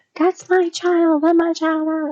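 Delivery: mock screaming, high-pitched and loud. Retelling a woman pounding on a car door, imitating someone screaming. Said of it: "screaming at her".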